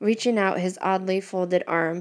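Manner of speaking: ordinary delivery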